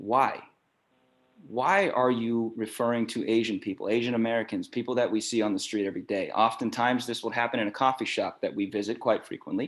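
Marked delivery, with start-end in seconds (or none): none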